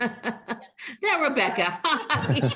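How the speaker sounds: high, laughing through the words.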